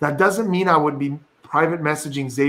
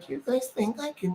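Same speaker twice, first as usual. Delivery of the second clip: put-on cute raspy little kid voice, higher, quieter; 9 semitones higher, 11 dB quieter than usual. Speaker imitating cute little kids who can barely get their voice out, raspy little kid voice. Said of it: "cute little kids who like barely could get their voice".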